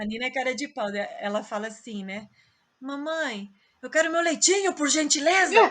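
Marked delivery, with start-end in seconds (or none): 2.8-5.5 put-on cheeky, loud, rude shouting in childlike voice. Mother retelling how her daughter asks her for things, imitating Nina being rude. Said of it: "ela tá sendo grossa".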